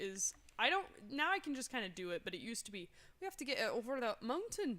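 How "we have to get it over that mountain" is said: put-on Irish accent. Showing a key line for getting into an accent: put-on Irish accent. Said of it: "or Irish is".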